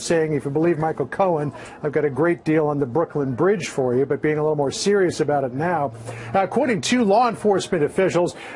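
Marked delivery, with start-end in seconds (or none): none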